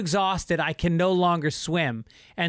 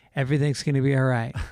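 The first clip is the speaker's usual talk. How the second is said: whispered words; 5 semitones lower than usual. Retelling what you whispered to the man you held in the water, whispering. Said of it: "I'm whispering".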